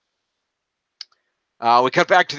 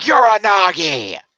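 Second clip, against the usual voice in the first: high, loud, drawn-out announcer scream. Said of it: "Michael Cole likes screaming".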